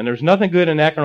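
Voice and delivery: ordinary talk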